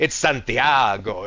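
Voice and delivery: put-on, sexy Latin accent. Showing how the new nickname should be said: sexy latin accent. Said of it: "it's gotta be said in, like, a sexy Latin, uh, like, accent".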